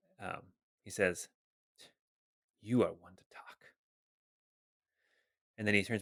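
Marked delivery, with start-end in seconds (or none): 2.6-3.6 muttered whisper under the breath, much lower and quieter. Game master voicing a character muttering to Ebby, whispered under his breath. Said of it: "whisper under his breath".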